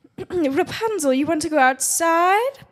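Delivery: belted out, high and slow. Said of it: "the Mother Knows Best voice".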